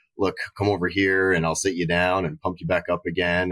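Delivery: normal talking voice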